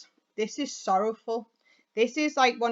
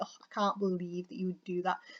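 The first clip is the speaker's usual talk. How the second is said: dismissive disdain, lower and quieter; 4 semitones lower, 8 dB quieter than usual. Explaining a tone for use in writing, the speaker demonstrates it: dismissive disdain. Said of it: "being quite sort of dismissive about it".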